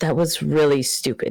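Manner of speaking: muttered quietly under the breath. Speaking in character to a companion while leaving, under his breath. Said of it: "under his breath".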